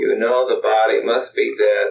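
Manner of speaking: ordinary delivery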